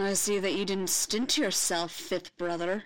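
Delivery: drawled, slow, languid, drawn-out. Narrator reads the Grand Inquisitor addressing Fifth Brother, drawling. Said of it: "he drawled".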